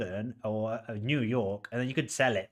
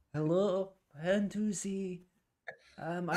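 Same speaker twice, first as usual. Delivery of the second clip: put-on old-man voice, slow, pitched up, drawn out; 5 semitones higher than usual. Putting Simon on a live feed to greet the listener, Simon's different old voice. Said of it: "I'll do a different voice".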